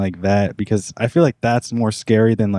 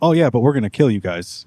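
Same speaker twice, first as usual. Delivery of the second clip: calm, unbothered, matter-of-fact tone; 2 semitones higher than usual. Retelling a man joking around over breakfast, in a flat monotone. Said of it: "he just says it in like such a monotone voice".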